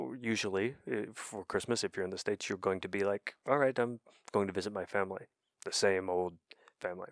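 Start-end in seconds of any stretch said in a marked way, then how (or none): none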